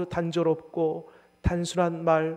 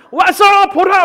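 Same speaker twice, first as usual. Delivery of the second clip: furious bark, very loud, high and shrill; 16 dB louder than usual. Showing how not to talk to evangelism contacts: as if angry. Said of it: "막 화내듯이 그렇게 얘기하면 안 됩니다".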